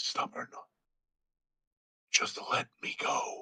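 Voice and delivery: distant, thin, faint, barely audible whisper. Someone calling for Caramon hears a reply, given as a faint whisper. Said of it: "a faint whisper back".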